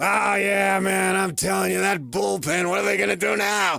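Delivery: raspy, gravelly chain-smoker voice, very high and loud. Retelling what a female Uber driver said: smoke-laden cigarette voice. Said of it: "he's mimicking her smoke-laden cigarette voice".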